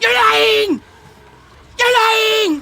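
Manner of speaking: very high, shrill, loud cartoon alien shriek. Asked for an Invader Zim impression, trying his yell for the other speaker. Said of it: "I can kind of do his yell a little bit".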